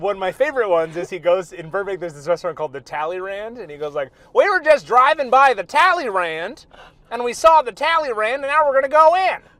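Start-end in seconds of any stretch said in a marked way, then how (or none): 4.3-9.4 loud, put-on Southern TV host accent. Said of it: "he's like this Southern kinda guy that talks like this".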